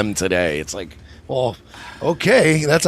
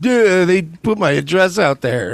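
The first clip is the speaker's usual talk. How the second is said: mock dopey, put-upon whiny voice, pitched up; 5 semitones higher, 3 dB louder than usual. Retelling what a woman says after doing things to others: mocking dumb voice. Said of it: "she's like".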